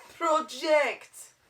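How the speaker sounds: loud, high, barking coach voice. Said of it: "We're coach voicing?".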